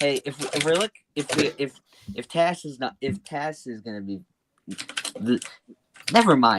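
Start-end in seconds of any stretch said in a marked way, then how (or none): 0.0-5.4 stuttering, tripping over words, full of false starts. Trying to make a point and getting stuck: stuttering. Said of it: "I don't stutter this much".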